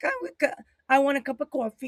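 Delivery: high put-on British accent after a false start. Imitating the listener's coffee order, in a British accent. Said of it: "Like you're British".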